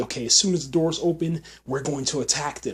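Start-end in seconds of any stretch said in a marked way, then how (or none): none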